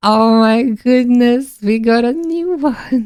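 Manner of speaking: voice cracking and breaking on the words. Speaker talking to their audience, voice cracking. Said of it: "my voice is cracking too much".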